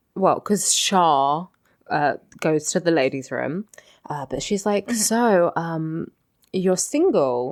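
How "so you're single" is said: mock-flirty little voice, slower. Retelling a TV scene where a woman talks to Big, in a mock-flirty little voice. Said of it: "does her little flirty voice".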